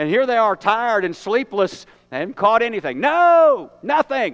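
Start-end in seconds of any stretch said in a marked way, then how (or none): 3.0-4.3 terse, partly annoyed, half-angry raised voice. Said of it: "part anger in their voice".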